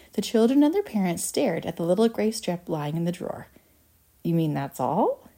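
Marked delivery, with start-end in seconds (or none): 4.2-5.1 sour, disgusted tone. Narrating a story, one of the children reacts to the gray cardboard strip: disgusted.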